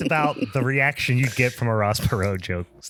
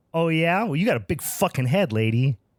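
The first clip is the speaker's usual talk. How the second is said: put-on rude kid inflection, much higher; 5 semitones higher than usual. Telling a joke, speaker delivers the trick-or-treating kid's reply, voicing the kid's rude retort. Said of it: "because of your inflection there".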